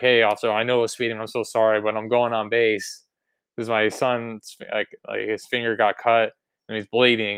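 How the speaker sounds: ordinary delivery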